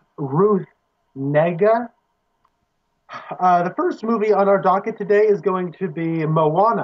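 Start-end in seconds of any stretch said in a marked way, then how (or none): 0.2-1.9 deliberate, very slow, careful enunciation. Listing a film's cast, saying the second star's name, said slowly. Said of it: "I'm going to say this slowly".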